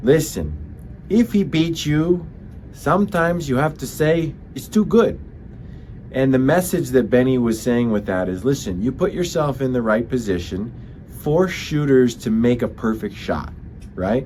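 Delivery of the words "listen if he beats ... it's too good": put-on French Canadian accent, pitched higher. Speaker quotes the goalie coach's saying in Benoit Allaire French Canadian accent. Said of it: "would always say in his French Canadian accent".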